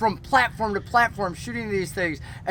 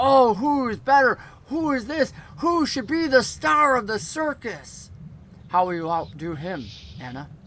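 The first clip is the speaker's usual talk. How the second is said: echoing, swooping, showy ringmaster barker patter; 3 semitones higher than usual. Game master voices Arimathea addressing the players from below; Arimathea's echoing, amplified voice. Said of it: "And she talks about each one of you, / And Arimathea's voice down below seems to echo off of the tent as if whatever magic she was using made the entire tent a speaker".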